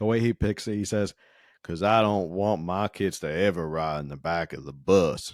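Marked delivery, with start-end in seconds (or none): 1.6-5.3 put-on, code-switched Southern drawl. Quoting him at the Rosa Parks Museum, imitating a fake Southern drawl. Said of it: "fake code switching Southern drawl".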